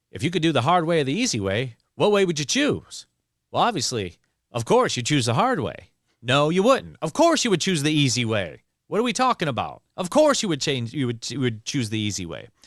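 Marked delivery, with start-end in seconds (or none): 0.2-10.4 put-on kind of Southern accent, narrator-style, swooping and high. Imitating an author voicing over his own books, in kind of a Southern accent. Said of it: "he had kind of like a Southern accent".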